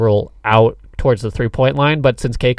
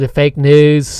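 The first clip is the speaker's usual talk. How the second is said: put-on voice, a little British, higher pitch; 4 semitones higher, 4 dB louder than usual. Answering a request to do a Trump impression: Trump impression, a little British. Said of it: "Can we hear your Trump impression?".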